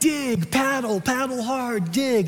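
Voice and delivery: urgent yelling, called out loudly. Recounting leading paddlers just before hitting the fang, retelling a yell. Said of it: "I'm yelling like".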